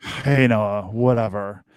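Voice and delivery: low, dry, expressionless acted deadpan. Describing a guy named Steve from years back, imitating Steve's deadpan delivery.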